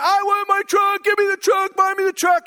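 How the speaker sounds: mock, high-pitched, screaming child's tantrum voice. Retelling carrying their kid through Target, imitating a screaming kid. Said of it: "this screaming kid".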